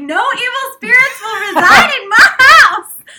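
very high, shrill, booming, loud put-on Southern lady accent. Retelling a prayer over the upstairs unit, in a Southern lady voice. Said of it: "I went like super southern lady on it".

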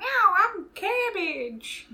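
high-pitched, slow cat voice.

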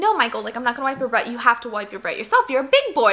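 ordinary delivery

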